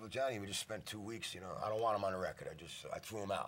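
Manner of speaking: ordinary talk, nothing marked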